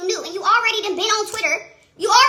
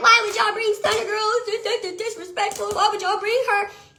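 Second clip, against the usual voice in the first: play-acted crying, tearful, betrayed and wounded tone. Retelling a woman's complaint that she was brought in to fight: imitating someone crying. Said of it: "the bitch was sitting there crying, like".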